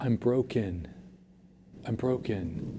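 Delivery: slow, hushed, quiet whisper. Retelling what students told them in confidence, imitating a whisper. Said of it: "whispering to me and been like".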